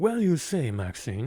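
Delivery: put-on cartoon character voice. Recalling a movie character who talks like a cartoon, quoting him, Foghorn Leghorn-style voice. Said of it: "he's like real life Foghorn Leghorn, just a dude with the suit who's talking like a cartoon character".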